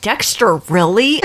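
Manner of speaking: normal talking voice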